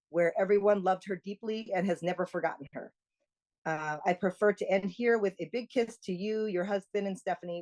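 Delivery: plain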